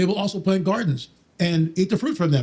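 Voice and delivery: normal talking voice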